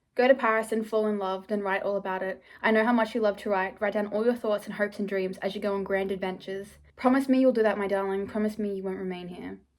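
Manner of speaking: ordinary talk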